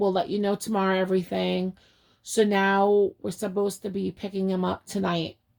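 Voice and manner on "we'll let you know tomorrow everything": plain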